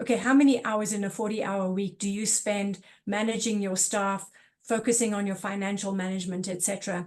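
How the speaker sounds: ordinary talk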